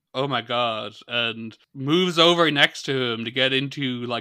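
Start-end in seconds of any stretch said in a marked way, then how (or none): none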